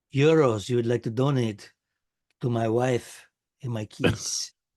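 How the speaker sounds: put-on Mexican accent. Doing a put-on accent while chatting: put-on Mexican-sounding accent. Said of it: "That sounds like, uh, Mexico".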